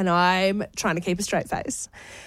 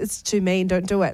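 usual speaking voice

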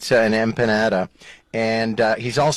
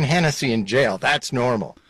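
plain

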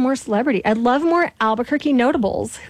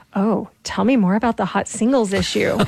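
mock sultry voice, lowered, hushed and sexy. Retelling what people on the street always ask about the magazine, imitating a lowered sexy voice. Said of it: "they always lower their voice like one octave".

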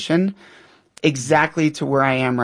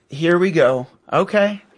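slow, belittling, sarcastic, dismissive tone; 3 semitones higher than usual. Showing what sarcasm toward a teen in desperation sounds like: sarcastic. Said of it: "What does that sound like, sarcasm".

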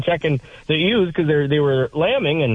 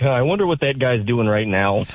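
normal talking voice

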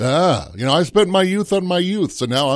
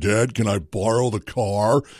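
put-on low, soft voice of a grown teenager; 5 semitones lower, 5 dB quieter than usual. Parent describes the same kid now walking into the room, imitating the grown kid's voice. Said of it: "walks into the room with a voice like this".

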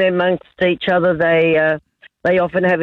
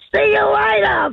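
put-on very high, cheeky little-boy yell. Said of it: "our little boy yells out".

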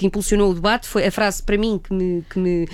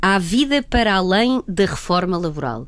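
serious-sounding, slow, dry ironic delivery; 2 semitones lower than usual. Speaker quotes the Minister of Labour to the audience; quoting ironically.

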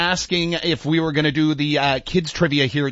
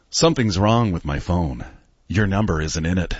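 straight-faced delivery, voice kept very low; 9 semitones lower than usual. Reading a pickup line aloud to another speaker: straight-faced delivery. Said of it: "a straight face delivery".

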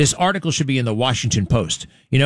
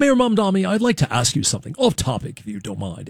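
mock pompous voice, higher; 5 semitones higher than usual. Mocking a reporter's question right after calling it pompous: imitating a pompous questioner. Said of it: "it's so pompous".

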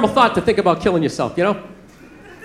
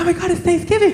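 put-on excited girlfriend-type voice. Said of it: "She's like".

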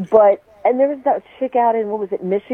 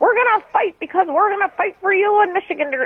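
very high-pitched, imitated Fargo-style accent; 11 semitones higher than usual. Imitating a speaker who says nothing of value, accent like Margie from Fargo. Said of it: "that was a great impression".

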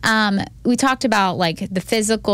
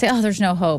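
ordinary delivery

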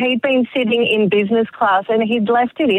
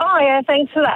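ordinary delivery

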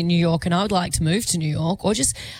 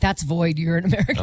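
normal talking voice

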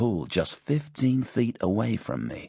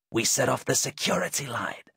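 hissed whisper, higher pitched; 4 semitones higher than usual. Ducking behind pampas grass beside Tim, the narrator speaks, hissed. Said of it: "I hissed".

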